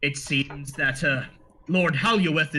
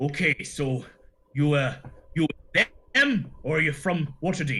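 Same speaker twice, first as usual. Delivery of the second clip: anxious, stammering, halting dwarf voice. Voicing a dwarf who shuffles over to the group: nervous dwarf innkeeper. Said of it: "with a nervous look on his face, and he says".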